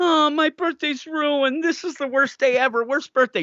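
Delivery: whiny, fake tantrum-like whining.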